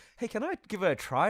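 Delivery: imitated polite, courteous tone. Retelling how someone asked to try an audition: imitating a polite request. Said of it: "very politely".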